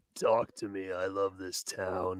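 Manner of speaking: hushed, soft, very slow, drawn-out put-on murmur. Answering what the killer Jason would sound like if he talked: imagined Jason voice. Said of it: "if Jason had a voice".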